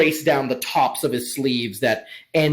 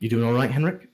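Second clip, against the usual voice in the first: put-on whispering. Retelling how he put an arm around henrik and checked on him, whispering. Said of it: "he whispers like".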